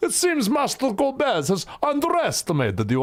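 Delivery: put-on Russian accent. Trying out voices for a game character's line, in a Russian accent. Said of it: "I am a Russian".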